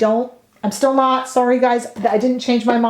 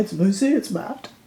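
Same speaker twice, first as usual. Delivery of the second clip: advert voice, lower and quieter; 4 semitones lower, 5 dB quieter than usual. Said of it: "I sound like I'm doing a commercial for them".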